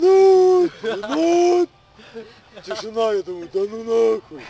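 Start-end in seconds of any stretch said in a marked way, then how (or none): 0.0-1.7 very loud, shrill, high, stretched-out drawn-out yelling. Recounting waiting for someone who never came, then retelling yelling a name. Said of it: "Как начал орать".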